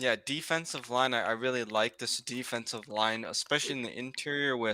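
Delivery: very soft, quiet, hard-to-hear speech. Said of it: "Can't hear you. Can you speak up?".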